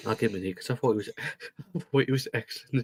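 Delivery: soft, laughing while talking. Rating players while reading comments on a video, laughing while talking. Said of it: "I'm just laughing at one of the comments".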